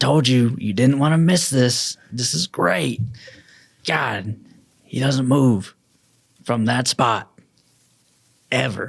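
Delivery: character voice bursting with excitement. Voicing an excited character pointing out a huge creature: excited character voice. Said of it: "And he's just excited".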